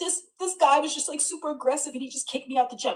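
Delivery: fake crying, high, words barely coming out. Retelling complaining to the security guard, the speaker is imitating crying. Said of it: "just crying. Can't even get the words out".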